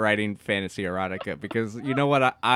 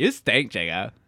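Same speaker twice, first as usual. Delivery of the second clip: put-on cartoon princess voice, much lower. Voicing someone's sister to a friend, in a Lumpy Space Princess voice. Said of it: "You're making her sound like the lumpy space princess".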